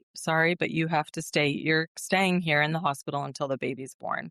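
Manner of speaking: usual speaking voice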